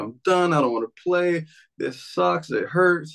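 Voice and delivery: acted, high-pitched sobbing, crying through words. Retelling telling mom after football practice he wants to quit: imitating own past sobbing. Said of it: "I'm literally sobbing".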